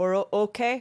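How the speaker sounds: halting, broken fragments, high and loud. Narrating a game, the speaker voices Ront answering Cora: Ront's broken Common. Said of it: "in his broken common".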